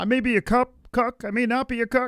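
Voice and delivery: squeaky, very high, mocking put-on voice. Mocking a quarterback he dislikes: mocking Mahomes voice. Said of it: "their quarterback that talks like this".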